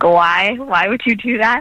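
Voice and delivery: put-on confused old woman voice. Retelling a grandma's reaction to going vegan: imitating a confused grandma. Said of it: "not annoyed, but she was just, like, confused".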